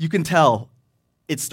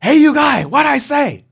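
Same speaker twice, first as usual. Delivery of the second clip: mock-angry shout, higher, louder, slower; 9 semitones higher, 8 dB louder than usual. Speaker retells a usually quiet man losing his temper in public, imitating angry shouting. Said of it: "his anger is growing".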